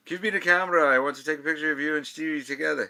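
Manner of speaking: put-on thick, loud, insistent Scottish accent. Retelling what the press agent Charlie said, imitating Charlie's heavy Scottish accent. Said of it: "Charlie has this heavy Scottish accent".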